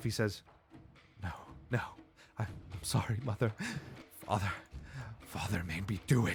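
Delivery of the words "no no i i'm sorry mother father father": soft, frantic, panicked blabbering. A game master voices a character who shifts between voices: panicking character voice. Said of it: "almost as if he's like panicking".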